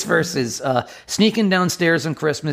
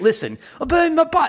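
very high-pitched put-on English accent; 13 semitones higher than usual. Speaker shows how he'd perform a line from the verse, in an English accent. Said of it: "I'll do it in an English accent".

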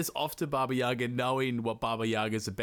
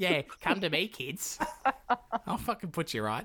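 threatening, menacing voice, pitched up; 6 semitones higher than usual. Retelling a fairy tale, the speaker gives the stepmother's reply to the kids, voicing the stepmother. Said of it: "And she's like".

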